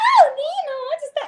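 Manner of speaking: very high, thin little voice, slow. Showing the thinner character voice fans know, Penélope voice, much higher. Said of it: "a voz da Penélope é muito mais".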